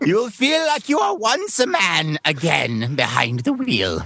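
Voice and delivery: high, sing-song put-on voice. Playing Cobra Commander selling a Prius, as invited: Cobra Commander impression. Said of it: "I'm not gonna try to do that impression".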